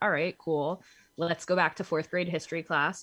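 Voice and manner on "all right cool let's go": ordinary delivery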